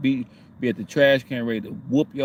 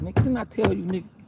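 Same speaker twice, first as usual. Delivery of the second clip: high-pitched, scolding, told-you-so tone; 8 semitones higher than usual. Retelling what God says to the speaker: voicing God scolding. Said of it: "God looking at me like".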